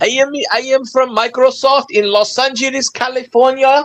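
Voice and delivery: mock Indian English accent. Mimicking a caller who claims to be from microsoft: imitated indian accent. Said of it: "How they talk".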